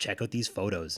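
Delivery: plain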